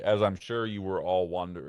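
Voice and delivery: ordinary talk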